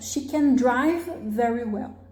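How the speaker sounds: main stress on the word drive. In an affirmative sentence the main verb carries stress, main stress on drive. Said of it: "na afirmação, é sempre no verbo principal".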